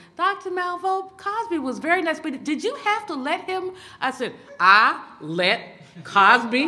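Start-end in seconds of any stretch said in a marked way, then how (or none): 0.2-3.7 put-on reedy, high-pitched elderly woman's voice. Retelling what Sister said when she called that night, reedy old lady voice. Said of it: "She said in her very reedy old lady voice".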